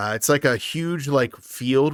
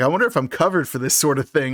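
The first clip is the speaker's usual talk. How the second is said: plain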